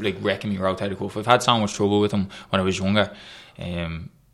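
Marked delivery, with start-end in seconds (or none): none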